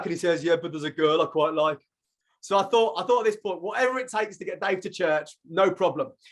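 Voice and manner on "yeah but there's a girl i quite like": put-on Birmingham accent. Retelling a friend's text reply: imitating Dave in Brummie accent. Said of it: "he texts back in Brummie".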